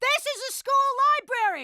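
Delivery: high-pitched shout. Insisting they don't know while in a school library: shouting. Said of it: "Could you please stop shouting?".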